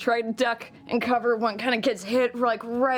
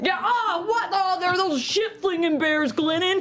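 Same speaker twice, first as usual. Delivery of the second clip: yelling, much higher pitch; 8 semitones higher than usual. In a tabletop game, calling out to a fellow player, yelling.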